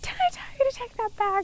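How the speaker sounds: very high, furious, acted-out scream. Recounting losing it when the food fell, retelling their own scream. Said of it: "I screamed".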